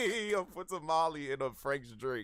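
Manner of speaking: laughing through the words.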